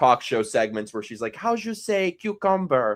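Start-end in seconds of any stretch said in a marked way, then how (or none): 1.4-3.0 thick fake Spanish accent, high and slow. Retelling talk show segments with a thick Spanish accent, imitating Hilaria Baldwin. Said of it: "talking in a thick Spanish accent".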